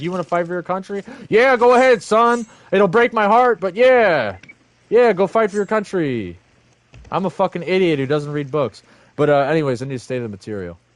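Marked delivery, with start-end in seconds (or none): 0.0-6.4 weak, spineless, pushover voice, pitched up. Acting out a mother answering her son who wants to join the military, mocking a spineless mom. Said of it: "who's a spineless fucking coward, is like".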